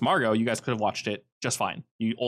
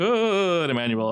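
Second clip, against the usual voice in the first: high, jokey, put-on zombie voice; 6 semitones higher, 4 dB louder than usual. Retelling a woman calling out Emmanuel's name in a zombie voice. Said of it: "she kind of like makes a zombie".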